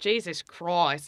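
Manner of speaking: put-on Australian accent. Demonstrating the word to get into an Australian accent: Australian accent. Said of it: "I guess I'll do it in Australian".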